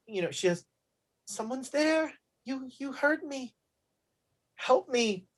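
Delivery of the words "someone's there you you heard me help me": faint, barely audible, high, far-off voice. Voicing Eliza as the players hear her very faintly: faint voice of Eliza. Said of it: "very faintly, you hear, um, you hear, uh, uh, Eliza's voice".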